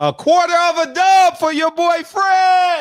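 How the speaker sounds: very high, loud, squeaky shout with a stretched word. Reading out a super chat message, doing a Blue Blood impersonation. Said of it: "was that a good Blue Blood impersonation".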